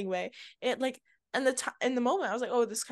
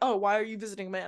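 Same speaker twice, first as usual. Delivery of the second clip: imitated defensive tone. Retelling what a man she was talking to said, imitating him sounding defensive. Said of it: "so defensive".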